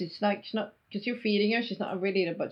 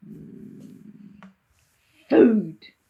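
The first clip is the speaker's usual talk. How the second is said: loud, hungry monster voice, relishing and savoring; 7 dB louder than usual. Voicing a creature whose lips curl at the sight of food: creature voice savoring food. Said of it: "lips curl and it's like".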